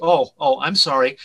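normal talking voice

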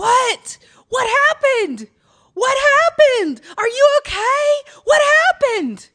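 shrill, very high, very loud screaming. Telling a story, re-enacting your own screaming after someone ran off: retelling own screaming. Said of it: "So I start screaming".

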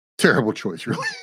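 ordinary delivery

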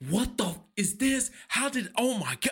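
high-pitched, frantic, panicked outburst. Retelling finding a puddle of water in the crawl space: acting out freaking out. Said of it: "And I freak out".

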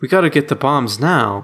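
breezy, offhand, mismatched casual delivery. Criticizing an actor's line reading, the speaker imitates his casual, mismatched inflection. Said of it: "he's got the wrong inflection in his voice".

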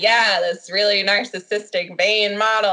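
mocking, sarcastic delivery. Retelling her reply when he asked about the script, mock-sarcastic retelling. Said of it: "She's sarcastically like".

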